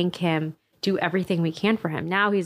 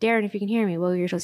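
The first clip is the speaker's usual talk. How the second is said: put-on loud voice, faster. Retelling what he said to Darren on the fourth visit: imitating someone speaking loudly. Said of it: "he would say very loudly".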